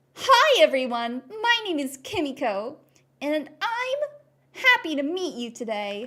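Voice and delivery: loud, sing-song preschool kids' cartoon voice. Demonstrating someone speaking like a cartoon character; Dora-style cartoon voice. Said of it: "someone speaking like a cartoon character, like a Dora-esque".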